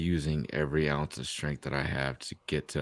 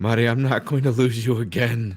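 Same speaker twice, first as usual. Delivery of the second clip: very loud, high shout; 8 semitones higher, 10 dB louder than usual. A player in a tabletop game, as a companion fades away, shouting to her. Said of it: "and I'm shouting".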